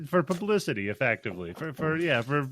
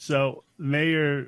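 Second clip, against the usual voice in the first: ordinary talk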